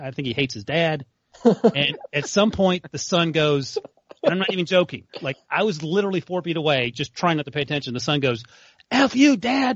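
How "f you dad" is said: put-on, shrill, very high, full-voice shout. Retelling a son's outburst at his father: retelling a top-of-voice shout. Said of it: "at the top of his voice".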